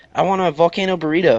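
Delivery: ordinary talk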